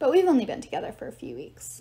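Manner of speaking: usual speaking voice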